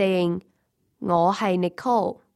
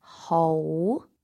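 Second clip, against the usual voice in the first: hou with pitch climbing high; 4 semitones lower than usual. Reviewing Cantonese tones before a test, second tone example: high rising tone on hou. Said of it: "The second tone is high and rising".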